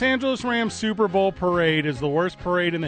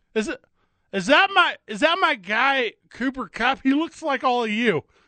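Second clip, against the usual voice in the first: put-on drunk speech, higher; 7 semitones higher than usual. Joining in on the drunk parade speech: drunk Matt Stafford impression. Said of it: "that was us doing impressions".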